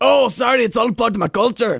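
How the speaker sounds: put-on Scottish accent, very high and loud. Joking with friends about a scottish guy with bagpipes, scottish accent. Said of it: "that sounded very Scottish".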